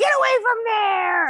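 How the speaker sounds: acted, very high, shrill scolding yell. Speaker shows how she yells at her cat, retelling yelling at her cat. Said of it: "I start yelling at her like I'm yelling at it".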